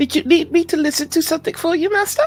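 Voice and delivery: very high, small, tiny little voice. Game master voicing an unseen speaker addressing a player, in a tiny voice. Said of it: "you hear a tiny voice going".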